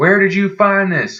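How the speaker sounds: furious shouting, loud and high. Retelling a man grabbing a map from a non-English speaker, imitating him yelling. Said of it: "yell louder".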